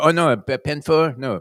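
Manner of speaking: put-on very slow, loud, sort-of French accent. Describing tennis-court ball poachers, imitating what they tell you: quasi French accent. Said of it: "that uh, you know sort of quasi French accent".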